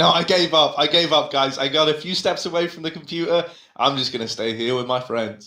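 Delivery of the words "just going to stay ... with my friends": normal talking voice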